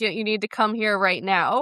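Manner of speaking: mock-panicked, frantic, freaking-out voice. Retelling how C G phones Chip and demands he come, imitating someone freaking out. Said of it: "she's freaking out".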